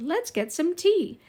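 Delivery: put-on British doll voice. Imitating a favorite doll that talked: british accent. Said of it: "would say in a British accent".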